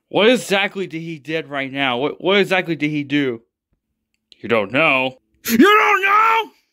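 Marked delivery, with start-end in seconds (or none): 4.4-6.4 furious yelling, higher and louder. Yelling at a family member who asks what happened: screaming in anger. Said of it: "father, stop screaming".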